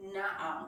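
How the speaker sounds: "na'ar" with stress on the first syllable. Teaching Hebrew word stress: stress on first syllable of 'na'ar'. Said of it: "emphasizing second from last syllable".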